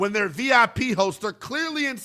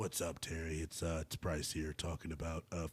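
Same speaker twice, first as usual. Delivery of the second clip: very quiet, hushed, creepy murmuring voice; 19 dB quieter than usual. Mocking a paid video message, imitating Bryce Harper's creepy tone. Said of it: "you sound like a damn pedophile, Bryce".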